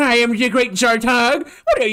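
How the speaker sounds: high-pitched, nerdy cartoon-villain voice. Recalling a character discussed the other night, doing Zartog nerd voice. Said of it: "he's got like a nerd voice".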